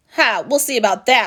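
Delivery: loud, growling, taunting demon monster voice. Reading a folktale: the Oni answers Isenboshi's challenge, growling. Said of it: "growled the Oni".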